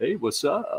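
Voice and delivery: douchey-sounding voice. Speaker demonstrating how they say hello, in a douchey greeting. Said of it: "that sounded douchey".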